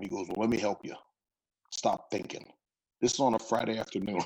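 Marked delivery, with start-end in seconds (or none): 0.3-2.5 put-on gruff old man voice. Retelling a phone call from an old coach: imitating Coach Bruce, gruff old man. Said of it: "this old gruff old man now".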